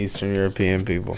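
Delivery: normal talking voice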